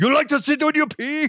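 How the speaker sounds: high, yelled put-on German accent. Joking about people who sit to pee: put-on German accent, yelled. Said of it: "You just gotta yell, basically".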